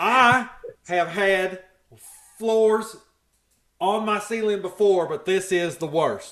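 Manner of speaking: put-on very loud, slow, drawn-out Tennessee accent. Imitating a housekeeper complaining about a carpeted ceiling: Tennessee accent. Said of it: "That sounds more Tennessee".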